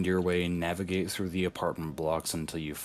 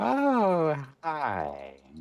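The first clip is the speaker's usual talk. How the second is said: put-on trembling, shaky old woman voice, swooping pitch; 11 semitones higher, 4 dB louder than usual. Game master voices an old woman answering a knock at the door: shaky old woman voice. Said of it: "this very shaky old woman answers the door".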